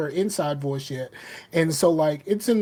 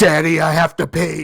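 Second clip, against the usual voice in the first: put-on very loud shouting voice, louder; 8 dB louder than usual. A father retells his daughter speaking right into his ear, retelling a loud shout. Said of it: "I'm bleeding from the ears".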